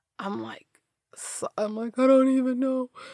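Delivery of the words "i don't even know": high, fast, tearful, helpless babble. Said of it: "I couldn't tell you why I'm crying".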